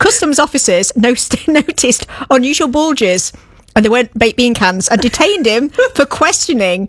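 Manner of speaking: words fighting off the giggles, holding back laugh. Co-host tells a news story about smuggled monkeys, holding back a laugh. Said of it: "I'm trying to say this without laughing".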